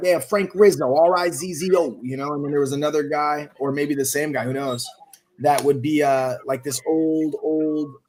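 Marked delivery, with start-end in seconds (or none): 0.0-2.0 put-on pitched-up, slow, laid-on New York accent. Speaker recalling crank callers who changed their voices, in Frank Rizzo New Yorker voice. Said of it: "change their voices and be like, you know, a New Yorker".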